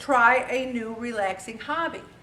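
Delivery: normal talking voice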